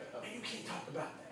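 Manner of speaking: very soft, hushed whisper. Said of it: "She's like".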